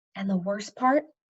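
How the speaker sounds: plain reading voice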